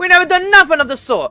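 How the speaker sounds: put-on New York mobster accent mixed with British accent. Voicing accused brothers denying a charge in court: New York mobster accent mixed with British. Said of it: "New York mobster, into, like, a little bit of, like, a British".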